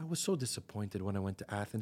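gentle, sweet, soft, low voice. Recounting what a woman from Spetses told her, imitating her soft, nice voice. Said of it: "in a very soft, like, nice voice".

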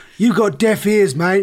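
prickly, dismissive retort, high and very loud. Retelling how an actor cut off an interview: imitating Russell Crowe. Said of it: "He's like".

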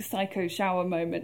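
ordinary talk, nothing marked

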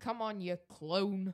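Bolton English accent. Practicing a phrase while another speaker judges the pronunciation, Bolton accent. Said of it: "obsessed with this Bolton accent".

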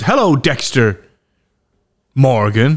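held pause, beat of silence mid-line. Imitating the Trinity Killer greeting: pause before the name. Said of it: "There's a little pause".

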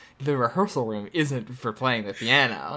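usual speaking voice

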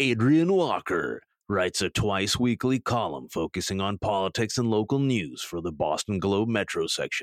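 film announcer style read. Speaker introduces a Boston Globe columnist in Moviefone announcer voice. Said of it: "do my movie phone voice".

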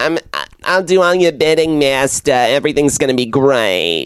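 put-on nasal mosquito voice. Playing the reanimated girl promising to serve the necromancer: Fran Drescher voice. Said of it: "And Fran is like".

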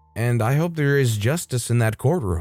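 ordinary delivery

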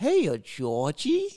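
eerie clown-like voice. Asked to do a Pennywise impression, attempting it: Pennywise impression. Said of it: "Can you do a Pennywise voice impression?".

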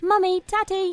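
very high-pitched, squeaky put-on English accent. Mocking how Peppa Pig spreads English talk, the speaker does a Peppa Pig English accent. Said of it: "They're all saying English".

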